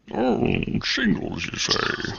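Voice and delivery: breathy, hushed put-on star voice, near a whisper. Answering a call for an impersonation with a mask on: Sean Connery impression. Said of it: "Just do a Sean Connery impersonation".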